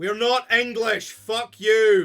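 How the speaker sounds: defiant rallying shout. A streamer bringing up Rangers bursts out: rousing freedom-style shout. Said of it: "now you're gonna stop doing the freedom".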